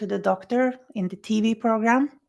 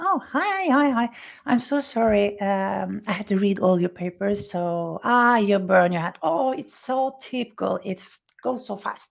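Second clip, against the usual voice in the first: acted-out, very calm, untroubled doctor voice. Retelling how the doctor came in to see you, imitating a calm doctor. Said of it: "and he was so calm".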